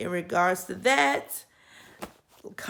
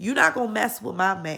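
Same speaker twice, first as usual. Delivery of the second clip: normal talking voice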